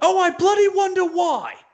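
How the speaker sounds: very high, loud, squealed upset outburst. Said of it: "And Zack Sabre Junior goes".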